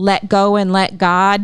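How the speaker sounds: ordinary delivery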